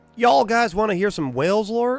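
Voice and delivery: hillbilly accent, pitched very high. Asking the others if they want to hear lore: hillbilly way of speaking. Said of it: "the most hillbilly way I could have said that".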